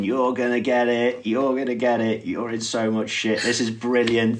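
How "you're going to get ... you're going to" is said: ordinary delivery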